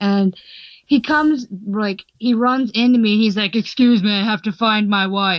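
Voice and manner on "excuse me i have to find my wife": deepest, scariest voice, dropped as low as possible. Retelling being bumped into at a panel: imitating Duke Nukem's deepest scariest voice.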